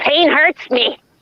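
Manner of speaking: high, obnoxious, whiny cartoon duck voice. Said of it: "that's my one Daffy Duck quote".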